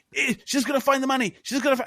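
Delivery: very high-pitched shouting. Recounting a friend watching a movie, retelling a friend shouting at screen. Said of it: "he starts shouting at the screen".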